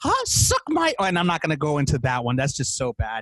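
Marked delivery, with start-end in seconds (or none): 0.0-0.9 very high, squeaky cartoon voice. Showing a crude version of the impression: porn Mickey voice. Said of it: "porn Mickey goes".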